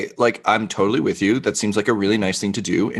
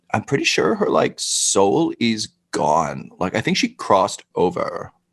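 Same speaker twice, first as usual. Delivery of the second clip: secretive, confiding, leaned-in aside. Playing a character leaning in to tell another character a secret: whispering in character. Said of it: "leans in as though she's whispering in your ear".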